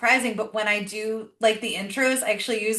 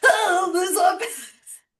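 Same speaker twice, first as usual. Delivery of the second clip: mocking, teasing tone, pitched up, very slow; 9 semitones higher than usual. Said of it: "she was like".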